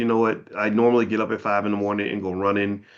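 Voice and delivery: normal talking voice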